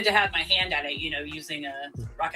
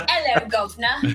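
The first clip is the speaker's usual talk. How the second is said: put-on British accent; 7 semitones higher, 6 dB louder than usual. Repeating another speaker's greeting: imitating a put-on British accent. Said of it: "All my British friends are gonna hear that".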